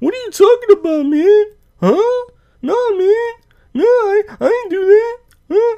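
very high, squeaky, defensive protesting voice. Imitating dudes called out for backstabbing, in a high-pitched voice. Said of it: "their voice gets like high pitch. You know, they kind of sound like this".

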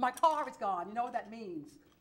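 normal talking voice

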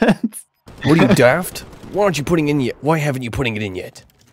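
loud, commanding voice. Wishing someone could do it, the speaker launches into a Captain Price impression. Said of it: "a really good Captain Price impression".

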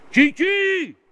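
very high, very loud, all-out yell. Showing how you must yell to join the Legion: shouted very loudly. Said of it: "C'est comme ça qu'il faut gueuler".

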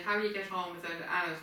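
ordinary delivery

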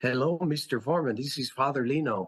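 put-on very heavy, thick Spanish accent throughout.

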